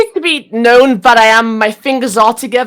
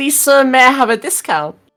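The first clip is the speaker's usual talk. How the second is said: earnest, imploring, begging tone; 2 semitones higher than usual. Voicing a customer begging a shopkeeper for a discount: pleading in character. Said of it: "as I said before".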